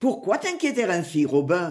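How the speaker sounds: ordinary delivery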